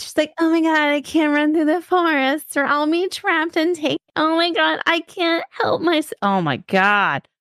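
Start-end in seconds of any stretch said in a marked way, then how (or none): 0.4-6.1 put-on high, prissy, helpless, wimpy girl voice. Mocking a book character who can't run through the forest: mocking a wimpy, prissy girl. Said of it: "a very wimpy, prissy, tiny bitch girl".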